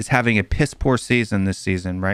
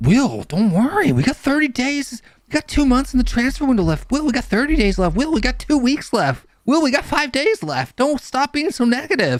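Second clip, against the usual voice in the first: very high, swooping, needling put-on whine; 14 semitones higher than usual. Retelling what the speaker was repeatedly told, in a put-on whiny voice. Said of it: "loving the voice you put on there".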